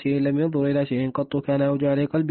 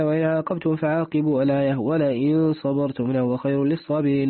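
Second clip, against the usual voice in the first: plain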